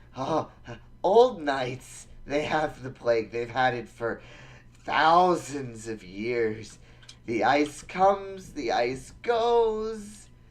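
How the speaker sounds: squealing, sobbing, rambling babble, "goes" drawn out. Captive cultist answers his interrogator about the building above: squealing, sobbing prisoner. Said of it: "Gone, wiped from the earth because of the demons and their plague. But we, we shall stop it, and we shall harness it. Yes, master, / um, and he's he's gonna squeal. / He's gonna start sobbing".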